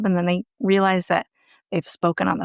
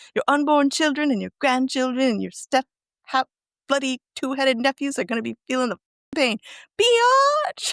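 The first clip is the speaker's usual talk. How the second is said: put-on mocking taunt, higher pitched; 5 semitones higher than usual. Retelling a scene where Mason taunts an opponent: imitating Mason taunting. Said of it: "Mason continues to taunt him. He's like".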